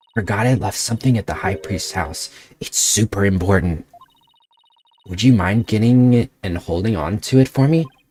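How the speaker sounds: speaking in a hushed whisper. A character asks a companion a favor, whispering. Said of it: "That explains all the whispering".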